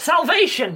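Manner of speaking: loud, high-pitched shouting.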